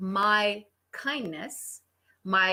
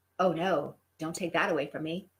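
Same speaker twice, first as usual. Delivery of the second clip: sarcastic mock dismay, lower; 4 semitones lower, 3 dB quieter than usual. Retelling own past reply in a story: imitating own sarcastic mock dismay. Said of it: "I do have a sarcastic side".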